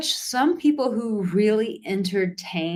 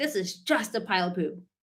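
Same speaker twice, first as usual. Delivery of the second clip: put-on acted, pissed-off, fed-up angry kid's voice; 6 dB quieter than usual. Retelling a story of a kid who finds a pile of poop: imitating an angry kid. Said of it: "He's pissed".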